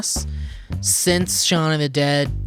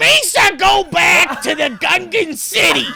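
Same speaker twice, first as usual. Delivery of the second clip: screaming put-on voice, much higher and louder; 14 semitones higher, 6 dB louder than usual. Asked to, speaker performs Gilbert Gottfried screaming as Jar Jar. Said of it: "It's just screaming Misa".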